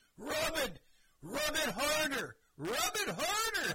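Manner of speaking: top-of-the-lungs screaming, very high, very loud, drawn-out. Retelling lying on the ground with cramps: imitating his own yelling at full voice. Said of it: "I'm yelling at the top of my voice".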